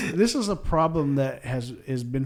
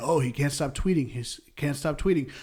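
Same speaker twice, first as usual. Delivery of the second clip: normal talking voice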